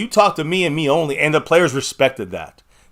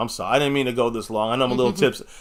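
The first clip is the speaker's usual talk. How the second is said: ordinary talk, nothing marked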